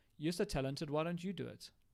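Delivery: ordinary talk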